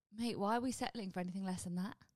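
ordinary talk, nothing marked

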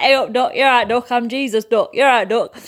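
chatty local Alfreton accent, East Midlands dialect, impression. Recalling a bit from their show, doing Jesus from Alfreton. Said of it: "I made Jesus an impression of like".

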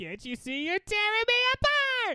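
very high, swooping, whiny classic-film style plea. Doing a classic line after talk of the archetype: James Dean impression. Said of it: "That's a classic James Dean".

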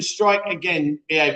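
ordinary delivery

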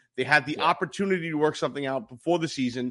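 ordinary delivery

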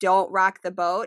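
normal talking voice

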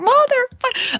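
very high, loud, acted-out shriek. Retelling a painful needle in the shoulder, the speaker re-enacts a loud yell. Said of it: "I yelled it so loud".

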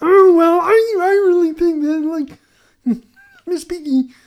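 very high, loud, slow puppet voice. Imitating a round table of look-alike voices: Kermit the Frog voice. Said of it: "they basically all speak with the same cadence".

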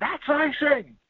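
heavy put-on Southern accent, very high pitch. Retelling what the hockey crowds shouted: imitating thick southern accents. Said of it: "with very thick Southern accents going".

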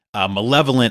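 normal talking voice

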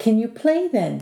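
gently urging, encouraging tone. An old man follows up after a refusal: prompted encouragingly. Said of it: "the old man prompted encouragingly".

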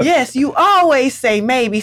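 dripping, mocking sarcasm. Retelling someone begging Mama for things, retelling a sarcastic reply. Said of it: "So sarcastic".

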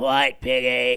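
very loud, throat-straining bellow, belted all-out. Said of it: "it's like that".

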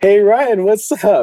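shrill, very loud, high-pitched shout. Retelling calling out to Ryan on a smoke patio, retelling a very loud greeting. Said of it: "in the loudest voice".

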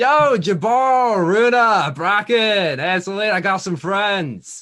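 high, loud, slow calling out.

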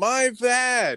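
put-on very high, shrill, yelled-out cry. Retelling a wrestler crying out during a leg stretch: imitating someone yelling. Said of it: "she yelled out".

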